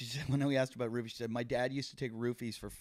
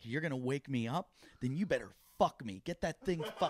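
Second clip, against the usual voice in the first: put-on yelling voice; 3 semitones higher than usual. Retelling a neighbor yelling at a man: imitating someone yelling. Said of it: "She's yelling at him".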